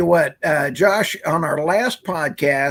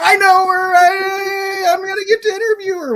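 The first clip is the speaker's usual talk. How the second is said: very high excited cheerleader yell, drawn-out "I"; 4 dB louder than usual. Retelling cheering at the tv during an interview: imitating own yelling at tv. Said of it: "I was yelling at the T V".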